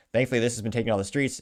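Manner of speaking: plain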